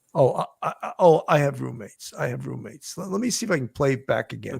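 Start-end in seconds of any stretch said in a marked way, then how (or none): 0.1-2.9 hesitant, apologetic, stammering, sorry-sounding put-on delivery. Retelling how a witness answered an officer, imitating an apologetic tone. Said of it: "almost saying it in an apologetic way".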